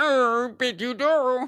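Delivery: very high, failed frog puppet voice impression. Trying a Kermit the Frog impression again: failed Kermit the Frog impression. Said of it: "I know that didn't sound, that sounded even less".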